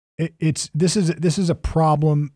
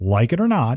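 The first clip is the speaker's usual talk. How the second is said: ordinary talk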